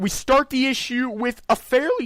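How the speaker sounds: voice cracking. Reviewing a comic issue aloud when the voice cracks, voice cracking. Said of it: "my voice just cracked".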